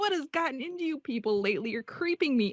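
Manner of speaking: put-on weirded-out, unsettled, alarmed, freaked-out outburst. Retelling Odin reacting to people acting strangely, acting freaked out as Odin. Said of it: "Odin's just freaked out".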